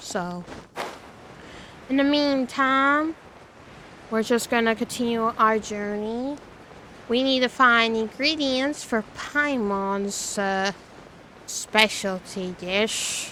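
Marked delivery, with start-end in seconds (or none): 11.5-13.3 sarcastic, breathy, half-whispered aside. Naming the ingredients quest for Paimon's dish: sarcastic tone. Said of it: "I'm saying that as a sarcastic tone".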